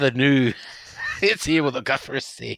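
put-on Scottish accent. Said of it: "make it clear that you need to do it in Scottish accent".

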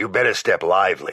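gravelly, rough voice. Narrator voicing Jack warning the narrator to step lively, in Jack's gravelly voice. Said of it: "in that gravelly voice of his".

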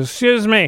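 mock slurred speech. Retelling a drunk couple's complaint about noisy children: imitating slurred drunk speech. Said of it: "They're all slurred".

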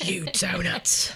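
put-on Cockney accent. Recalling a kids' quiz show host, doing a Mike Reid impression. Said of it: "These are our best Mike Reid impressions".

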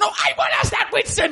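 put-on angry outburst. Retelling the moment a man completely snaps at Winston: imitating someone snapping angrily. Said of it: "that's when he completely snaps".

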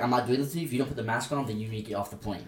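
ordinary talk

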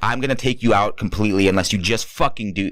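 put-on, pissed-off, angry and threatening. Retelling a threat after a third failed take: imitating Sam getting pissed. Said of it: "gets pissed".

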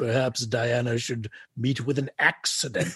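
put-on implacable, menacing villain voice with vague European accent. Mimicking a man who makes proclamations, in a mock-menacing vague European accent. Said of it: "vaguely European accent, and just sort of makes like menacing proclamations like".

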